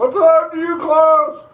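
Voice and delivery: high, slow, loud yell.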